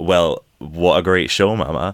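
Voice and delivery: ordinary talk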